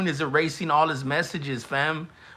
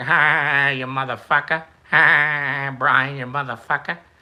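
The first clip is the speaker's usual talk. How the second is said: slow voice with long, drawn-out, stretched "ha"; 5 dB louder than usual. Imitating how On the Moon laughs: Peter Griffin voice. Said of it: "he sounds like Peter Griffin".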